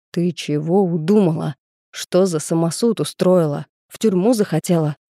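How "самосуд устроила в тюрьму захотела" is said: ordinary delivery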